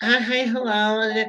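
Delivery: imitated womanish voice. Mocking how big men greet people, in a mock feminine voice. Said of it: "they put on that little punk ass voice".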